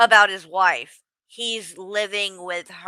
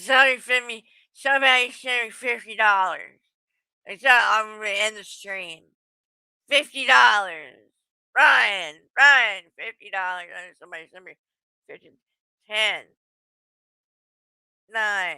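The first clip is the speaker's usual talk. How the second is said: mock drunken slurred words, put-on slur. Acting out how A J supposedly talks drunk on stream: imitating A J's drunk slurring. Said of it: "slurring her words".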